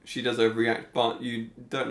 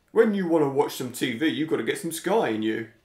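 laddish, salesy TV advert voiceover; 3 semitones higher than usual. Doing a requested impression of Idris Elba from the Sky adverts: imitating Idris Elba. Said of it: "Do his voice".

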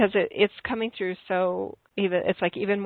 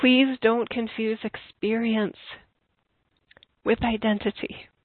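on the verge of tears; 3 semitones higher than usual. Speaker continues on with the talk while tearing up. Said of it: "as I'm tearing up here".

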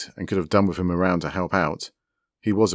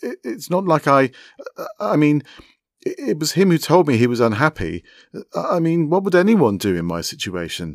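rattled, caught-out flustering, high and swooping; 9 semitones higher, 4 dB louder than usual. Narrating Hargreaves answering an accusation at the table, flustered.

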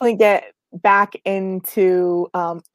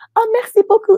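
put-on sweet, cute, very high little French accent; 5 dB louder than usual. Imitating the other speaker thanking someone in French: cute little French accent. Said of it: "this cute little French accent".

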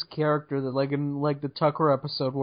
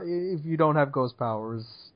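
ordinary talk

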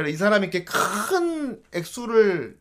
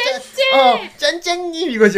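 put-on very high, lisping little-girl baby talk; 10 semitones higher, 3 dB louder than usual. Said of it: "혀 짧은 소리로 이렇게".

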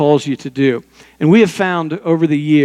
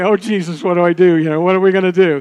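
anxious, frantic, panicky fretting voice; 3 semitones higher than usual. Retelling own inner prayer while only pretending to be calm: imitating own anxious inner voice. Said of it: "I wasn't calm".

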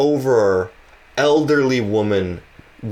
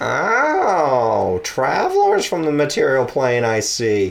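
put-on swooping, sing-song old woman voice, long oh; 3 semitones higher than usual. Voicing a character who greets travelers bringing Boogle back, in an old lady voice. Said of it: "this is just my old lady voice".

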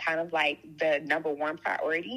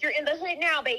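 squeaky, very high-pitched put-on little voice; 11 semitones higher than usual. Talking about having a baby, saying a line in a Kim voice. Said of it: "in my little Kim voice".

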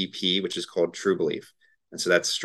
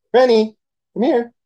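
very high-pitched, raised voice; 11 dB louder than usual. Showing the voice used when calling the dog over, high-pitched voice for the dog. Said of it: "it's definitely just a higher pitched voice".

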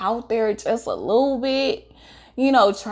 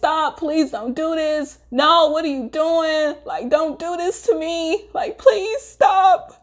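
put-on high, crying, pleading tone; 6 semitones higher than usual. Recounting being held down by him, retelling crying, pleading. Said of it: "I'm at this point where I'm crying".

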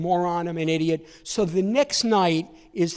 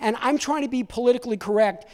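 ordinary talk, nothing marked

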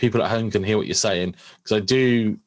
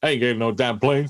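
put-on tough guy voice, higher; 3 semitones higher than usual. Quoting the A-Team line as a Mister T impression. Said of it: "Mister T impression".

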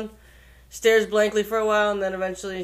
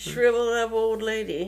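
ordinary talk, nothing marked

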